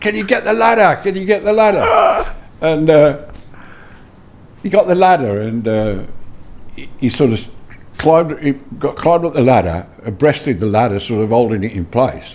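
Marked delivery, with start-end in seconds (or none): 0.0-2.3 put-on very high, urgent shout. Retelling calling out to an old man walking up the road; retelling a shout for help. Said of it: "and I'm shouting".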